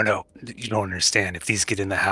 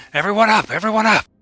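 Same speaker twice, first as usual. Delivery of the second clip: very high, very loud, shrill alarmed shout; 13 semitones higher, 9 dB louder than usual. A character suddenly wakes and rouses the whole group: loud yell. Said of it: "wake up with a yell so loud".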